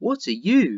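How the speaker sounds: put-on high, childlike doll voice. A china doll speaks to Edward, newly placed beside her on the shelf, high-pitched voice. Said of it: "she said in a high-pitched voice".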